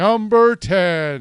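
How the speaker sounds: put-on loud countdown announcer voice, "ten" drawn out. Opening a list of the year's worst games in an announcer voice. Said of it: "Time to put on my announcer voice".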